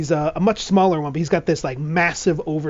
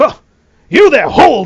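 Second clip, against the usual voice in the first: very loud, high-pitched, commanding voice; 8 semitones higher, 12 dB louder than usual. Voicing an older armored mouse who stops a stranger: voicing an older armored mouse. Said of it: "he's like".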